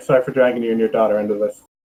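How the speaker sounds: low, hushed mutter under the breath. Voicing Cameron apologizing to Robert: said under breath. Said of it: "say under breath to Robert".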